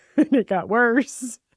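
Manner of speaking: speaking through high, loud laughter.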